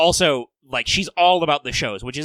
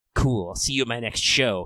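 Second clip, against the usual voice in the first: put-on laid-back cool voice, lower pitch; 3 semitones lower, 3 dB quieter than usual. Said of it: "if Melt could physically move her fingers to give you finger guns".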